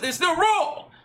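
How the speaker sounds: very high angry yell. Speaker recalls a man correcting their sweeping, imitating a raised voice. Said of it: "he raised his voice like that".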